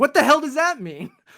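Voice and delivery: high, loud, baffled outburst. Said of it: "And I'm like".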